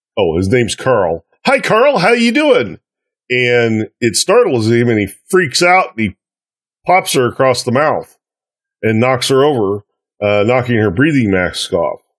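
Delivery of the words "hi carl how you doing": very high, bright, sunny, cheery voice. Retelling Gadam stepping between Bakar and the bullies, imitating Gadam's cheery voice. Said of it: "in her cheery voice says".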